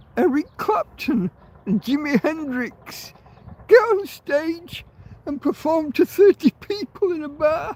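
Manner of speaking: very high, tearful crying voice throughout. Telling a story about eric clapton and jimi hendrix, the speaker is moved: crying while telling a story. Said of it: "I don't know why I'm crying".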